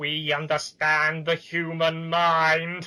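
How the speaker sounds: slow, loud, grinding, chilling voice. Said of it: "Including the chilling line".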